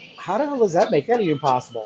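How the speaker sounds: plain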